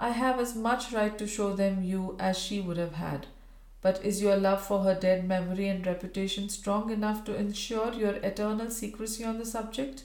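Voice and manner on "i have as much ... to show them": ordinary delivery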